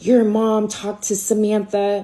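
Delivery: angry, pissed-off, accusing tone. Retelling an angry phone call about the speaker's mom, imitating an angry caller. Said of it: "He calls me like all pissed off".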